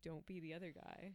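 ordinary delivery

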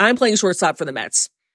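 play-acted, heavily sarcastic, dripping with sarcasm. Retelling a man's reply to a woman's denial, imitating a very sarcastic remark. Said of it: "he very sarcastically was like".

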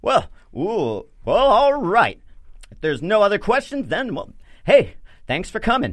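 very high, booming holy-warrior voice. Narrating a scene, the speaker voices a paladin addressing a room, booming paladin voice. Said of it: "you immediately hear the booming voice of a paladin".

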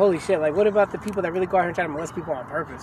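ordinary delivery

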